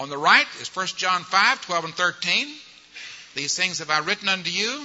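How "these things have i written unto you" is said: ordinary delivery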